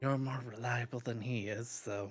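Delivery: hushed, secretive half-whisper. Telling another character something in confidence: half-whispering. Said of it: "I whispered it".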